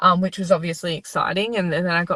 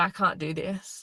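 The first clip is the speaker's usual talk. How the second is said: mock crying voice, quieter; 7 dB quieter than usual. Retelling giving up on the ground at a test: imitating own sobbing. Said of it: "And I just was sobbing".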